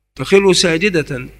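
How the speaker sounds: normal talking voice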